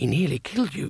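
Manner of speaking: spoken as a hiss. A narrator reads one wizard's words to another during an assembly, hissed. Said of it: "he hissed".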